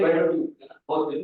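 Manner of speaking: normal talking voice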